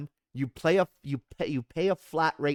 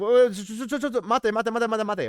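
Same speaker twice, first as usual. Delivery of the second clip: pitched-up, raised calling out; 7 semitones higher than usual. Retelling being stopped by the train man: imitating the tram conductor stopping him. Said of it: "the train man stops me and is like".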